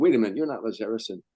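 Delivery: normal talking voice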